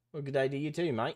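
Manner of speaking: badly done Australian accent. Replying to a chat greeting from down under: butchered australian accent. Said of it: "Sorry for butchering your accent".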